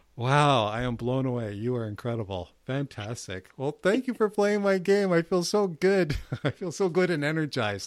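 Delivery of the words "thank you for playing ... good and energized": touched, emotional voice, close to tears. Host thanks a guest for playing the host's game; emotional, close to tears. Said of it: "Oh, I'm about to cry".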